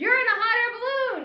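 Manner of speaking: high, loud, slow yell. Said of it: "the guy looks up and yells".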